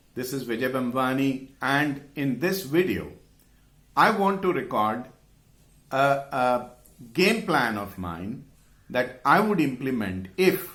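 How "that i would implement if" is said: heavy stress, leaning hard on the word if. Video intro describing a game plan he would implement: strong emphasis on if. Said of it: "just listen to the emphasis on the word if".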